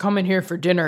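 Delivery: growled, low growling voice. Explaining dialogue tags in writing, a speaker reads an example line, growling. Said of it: "he growled".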